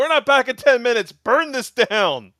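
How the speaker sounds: shrill, very high shouting at full volume. Recapping a scene where a character calls out while being sucked down, retelling a shout. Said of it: "he was shouting".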